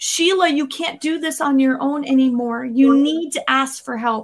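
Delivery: ordinary talk, nothing marked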